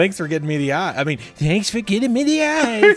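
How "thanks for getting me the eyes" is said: high, loud, pushed-out mouse voice. A player voices a mouse in a tabletop game, in Adam Sandler voice. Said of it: "Still sounds like Adam Sandler".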